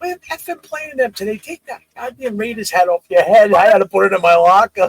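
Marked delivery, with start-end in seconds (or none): 0.0-3.5 mock yell, higher and louder. Retelling a coach scolding over a Raiders hat: imitating a coach yelling. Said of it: "he starts yelling at me".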